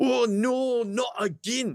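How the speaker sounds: put-on very high-pitched, broad Glaswegian accent. Retelling what an audience member in the front row said, in a broad glaswegian accent. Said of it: "in a broad Glaswegian accent".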